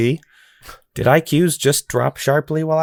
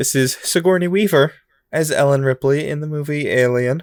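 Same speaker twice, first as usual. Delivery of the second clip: plain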